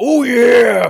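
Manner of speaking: very high, very loud whoop belted out. Joking about how a movie character might have sounded: Macho Man Randy Savage voice. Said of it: "not like Macho Man Randy Savage".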